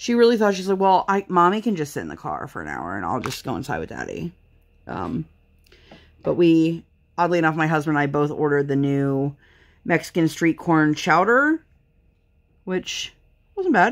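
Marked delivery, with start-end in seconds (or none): 0.8-4.3 put-on deadpan kid voice, quick and low. Mother retelling her kid's reply, imitating a deadpan kid. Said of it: "she was so deadpan on it".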